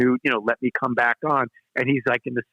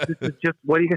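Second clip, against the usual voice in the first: mock speech breaking up with laughter; 4 semitones higher than usual. Retelling the agent's reaction on the phone, imitating someone laughing. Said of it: "She's on the floor laughing".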